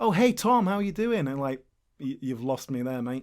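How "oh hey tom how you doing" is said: high, phony, over-familiar, fake-friendly tone. Retelling strangers greeting by a name read off a list: imitating a fake-friendly greeting. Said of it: "you're faking".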